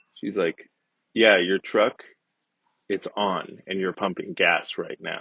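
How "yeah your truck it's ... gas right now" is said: mock condescending tone in a woman's voice. Retelling what a woman said to him while he pumped gas, imitating a condescending woman. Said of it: "nodding her head with her eyes as wide".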